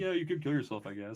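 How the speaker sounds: nonchalant. Retelling a character's line from a scene: imitating a nonchalant character. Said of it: "he's so nonchalant about whatever".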